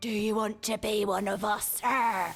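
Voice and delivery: slow, ominous, scary, menacing voice. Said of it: "You sound terrifying".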